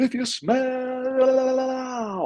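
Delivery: mock very high, top-of-lungs shout, "smell" stretched. You act out jumping off the sofa before your dad walks in, retelling a shout at top of voice. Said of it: "at the top of my voice".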